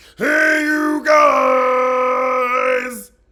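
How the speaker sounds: very loud, high-pitched hollered shout. Mocking how someone's greeting sounded: Goonies "Hey you guys" voice. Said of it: "it was almost giving me a Goonies".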